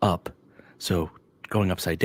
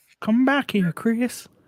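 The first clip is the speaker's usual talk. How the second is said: put-on creepy old man voice, higher pitched. Doing the voice after being told to talk like the old guy from Family Guy. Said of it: "you have to talk like this".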